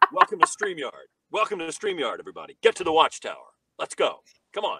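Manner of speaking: rousing delivery with pitch swinging widely. Asked to do the Superman voice before leaving: Superman voice. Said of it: "will you do the Superman voice before you go?".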